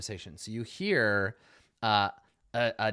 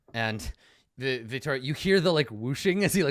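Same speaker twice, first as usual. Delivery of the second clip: normal talking voice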